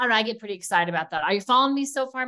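excited, rattled off very fast. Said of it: "am I talking way too fast".

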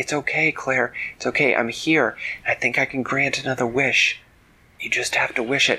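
plain

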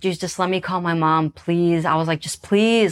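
acted-out, begging, pleading tone. Recounting a captor who refused, the speaker replays asking to call mom: retelling own begging. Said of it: "I just like was begging".

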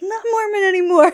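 exasperated laughing, high, loud and fast.

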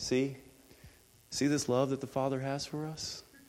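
level, lifeless, even monotone. Showing how a quoted line sounds delivered as a flat monotone. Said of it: "it's not this monotone thing where he's like".

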